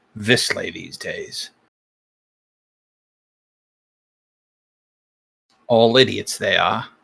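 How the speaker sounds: sour, grumbling mutter under the breath. A man shakes his head and walks off after someone leaves his room: muttering. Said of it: "you hear him mutter".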